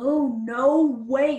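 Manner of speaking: stunned, floored, incredulous voice. Retelling how a friend reacted to the news: imitating Bones. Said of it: "that's my, um, impersonation of Bones".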